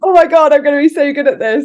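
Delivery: play-acted overexcited, eager, loud, high gush. Telling the other speaker how they once felt about their thirties, imitating their own excited past self. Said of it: "look how excited I was".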